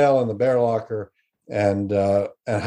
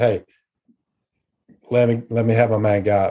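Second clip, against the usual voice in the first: ordinary talk, nothing marked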